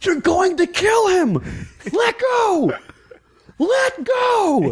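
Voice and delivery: put-on screaming, very high, very slow and drawn out. Retelling a fight heard from the background: imitating Bill Nesper screaming. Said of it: "I just hear Bill Nesper screaming".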